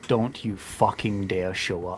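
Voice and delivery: muttered, mumbling under breath. A player character staring through the armor, muttering under breath. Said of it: "just mutter under my breath".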